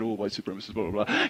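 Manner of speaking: low, very quiet mutter under the breath. Retelling what another speaker said quietly: imitating a mutter under the breath. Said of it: "under your breath you sort of said".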